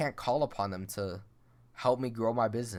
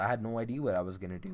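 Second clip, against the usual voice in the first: crazy voice crack, voice breaking. Recalling a moment of feeling lost, with a crazy voice crack. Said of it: "That was a crazy voice crack".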